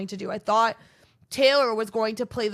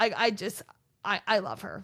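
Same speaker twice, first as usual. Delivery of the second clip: plain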